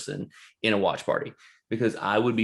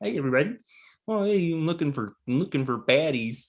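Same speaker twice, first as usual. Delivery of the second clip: high, pitched-up frog puppet voice; 6 semitones higher than usual. Saying he needs Kermit to do the bit, then doing it in Kermit voice. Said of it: "I gotta get Kermit in here to do it".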